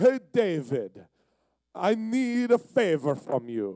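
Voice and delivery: sing-song, heavily exaggerated video-game Italian accent. Retelling how Rel came down asking for a favor: imitating Rel, Mario-like Italian accent. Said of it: "He sounded like Mario".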